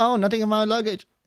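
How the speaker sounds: put-on Chinese accent, voiced very high. Acting out someone caught lying on a live screen, in a Chinese accent impression. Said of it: "that was a Chinese impression".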